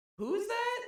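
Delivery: very high, loud startled voice. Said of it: "the first thing she goes".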